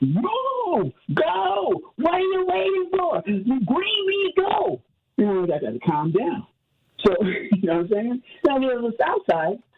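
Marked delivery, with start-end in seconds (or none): 0.0-4.8 put-on shrill, very slow, drawn-out impatient yelling. Complaining about slow drivers, re-enacting yelling in the car. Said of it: "I'm yelling in the car".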